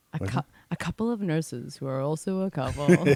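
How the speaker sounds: low, gloomy, downbeat, sad-sounding delivery. Imitating the other speaker's intro line: imitating Eeyore-like delivery. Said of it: "particularly Eeyore of you, the way that you say that".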